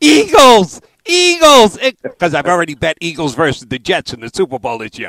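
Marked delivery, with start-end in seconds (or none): 0.0-1.8 very loud, very high shrill scream. Retelling watching a show and answering a question at the TV: retelling a scream. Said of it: "I'm screaming at my TV".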